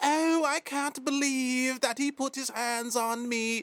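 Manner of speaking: mocking, high, slow put-on English accent. Ranting about people who start fights, mocking their complaint in an English accent.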